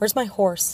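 plain reading voice

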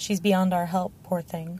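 ordinary delivery

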